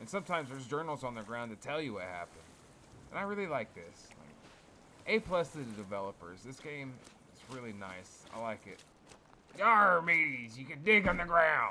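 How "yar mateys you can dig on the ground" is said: very loud, hearty, put-on pirate accent. Talking over a game he is playing, the speaker slips into a pirate accent. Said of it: "I don't know if that was a good pirate accent".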